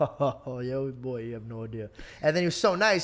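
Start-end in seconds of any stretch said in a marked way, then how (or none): 0.0-1.9 put-on very slow, laughing older-man voice. Retelling how the man next to him in line replied, laughing like an older man. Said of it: "he starts laughing like an older man".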